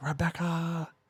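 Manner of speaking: mock screaming in an English accent. Showing how the brother calls his sister: imitating Klaus screaming. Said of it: "he'll scream".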